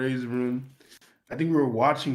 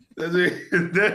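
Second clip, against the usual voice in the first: ordinary talk, nothing marked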